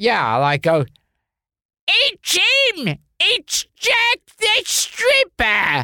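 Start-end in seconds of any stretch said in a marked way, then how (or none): 1.9-5.9 very high, swooping, drawn-out cry. Performing an old skit line after being asked to let them hear it: Una O'Connor impression. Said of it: "I was basically doing an Una O'Connor".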